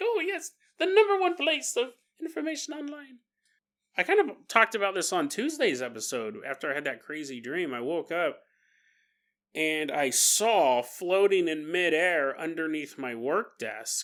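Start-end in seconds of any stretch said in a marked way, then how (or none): 0.0-3.2 squeaky, very high put-on leprechaun voice. Speaker voices an imagined leprechaun's reply to his own remark, leprechaun voice. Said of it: "The leprechaun's like".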